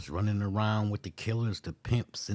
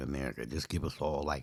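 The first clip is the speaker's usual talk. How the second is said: normal talking voice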